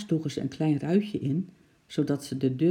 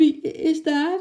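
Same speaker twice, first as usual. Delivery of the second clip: very high, quavering, trembling voice; 12 semitones higher, 6 dB louder than usual. Reading a story, a man hears something bang against his door: trembling voice. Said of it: "Vroeg hij met een trillende stem".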